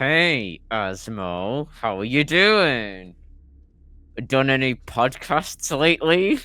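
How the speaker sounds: very loud, through gritted teeth, drawn out. Speaker imagines the listener greeting a man at the game shop, with a mock gritted-teeth greeting. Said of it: "like gritted teeth".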